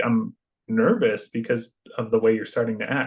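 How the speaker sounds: normal talking voice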